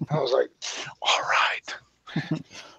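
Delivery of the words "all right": whispering, hushed and quieter. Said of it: "Why are we whispering about it?".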